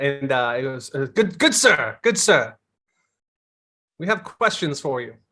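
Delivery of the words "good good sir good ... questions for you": called-out, in-character yell. Calling out in character to the brother after a stumble: yelling out. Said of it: "I'm just yelling this out".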